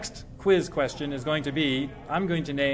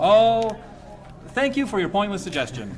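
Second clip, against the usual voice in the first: sarcastic, pointedly laid on, sing-song; 5 semitones higher, 3 dB louder than usual. Replying to someone's suggestion of other topics for Jerry, sarcastic. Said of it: "That was sarcastic".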